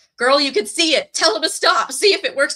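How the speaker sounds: loud, high-pitched hollering. Recalling a favorite TV show moment, retelling yelling at the TV. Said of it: "I'm yelling at the T V".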